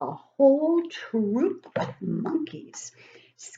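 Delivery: plain reading voice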